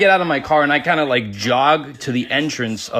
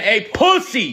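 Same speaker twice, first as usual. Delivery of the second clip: high, raised, called-out yell; 8 semitones higher than usual. Retelling a guy yelling the insult again: imitating someone yelling. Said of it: "yells it again".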